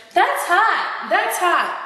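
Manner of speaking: put-on high-pitched valley-girl tone. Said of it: "that darn [name]".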